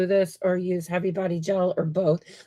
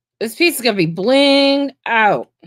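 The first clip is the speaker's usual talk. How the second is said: loud shouting, far too loud; 4 semitones higher, 7 dB louder than usual. Describing a piece being worked on: shouting into the camera. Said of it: "I'm shouting into the camera".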